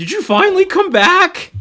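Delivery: trembling, very loud, very high, rising yell. Game narrator voicing someone calling out from near the exit, shaky voice yelling out. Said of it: "You hear a shaky voice near the exit yell out".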